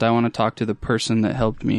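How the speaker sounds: usual speaking voice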